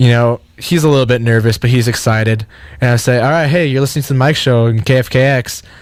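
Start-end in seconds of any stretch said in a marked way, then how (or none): none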